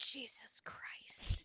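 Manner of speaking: put-on child's soft whisper, under the breath. Retelling what a child said while getting cream rubbed on: imitating a child whispering.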